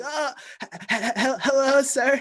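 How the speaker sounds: put-on shaky voice. Retelling calling a man back about a voicemail, imitating own shaky voice. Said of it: "I was all shaky. My voice was like".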